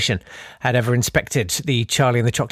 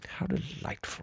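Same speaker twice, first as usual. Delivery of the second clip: hushed, posh British villain-style whisper; 17 dB quieter than usual. Discussing villains' accents, the speaker quotes Shere Khan's line in Shere Khan voice. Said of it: "the villain sounds like he or she just walked off the set of Downton Abbey".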